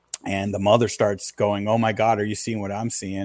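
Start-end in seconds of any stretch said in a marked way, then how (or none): none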